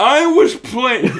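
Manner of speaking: aggressive, very high, loud, hard boast. Retelling a podcast bit of hypotheticals: imitating Donald Trump aggressively. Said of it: "get more and more aggressive every time".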